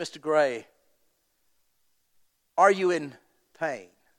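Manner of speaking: imitated British accent. Retelling what a nurse asked in the recovery room: imitating a british accent. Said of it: "had this beautiful British accent".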